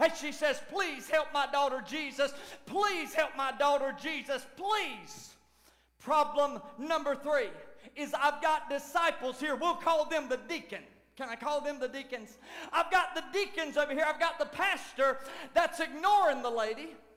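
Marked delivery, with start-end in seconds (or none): 0.7-5.3 put-on desperate crying and wailing. Speaker acting out a desperate woman's plea to jesus, imitating desperate wailing. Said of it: "a desperate woman wailing and crying".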